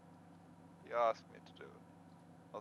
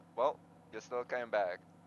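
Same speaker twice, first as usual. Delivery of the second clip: ordinary talk, nothing marked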